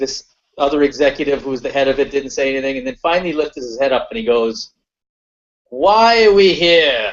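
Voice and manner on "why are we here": put-on thick British accent, very slow, loud, very drawn out. Retelling an executive lifting his head to ask a question, thick British accent. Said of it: "in a thick British accent, which I do no justice to".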